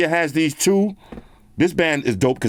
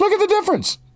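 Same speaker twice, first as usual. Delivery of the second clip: squeaky, playful put-on voice, very high. Comparing two watch screens' brightness: put-on high voice. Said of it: "I gotta take it to the high voice".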